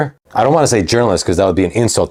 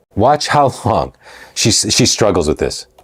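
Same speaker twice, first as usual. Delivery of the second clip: usual speaking voice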